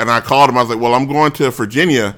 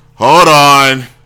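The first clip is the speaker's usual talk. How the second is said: put-on annoyed tone, louder; 2 semitones higher, 8 dB louder than usual. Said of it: "she would sound annoyed with me".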